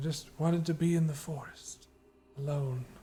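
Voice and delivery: frail, weak, feeble, high little voice. Narrating a scene, voicing someone in the middle of the room, feeble voice. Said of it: "You hear a more feeble voice".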